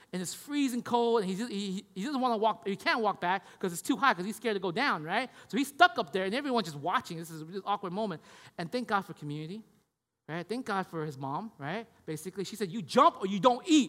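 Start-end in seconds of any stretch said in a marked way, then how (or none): 12.7-13.8 acted-out loud, harsh screaming. Retelling a mother screaming at her son to jump: imitating a mother screaming. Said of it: "screaming out there".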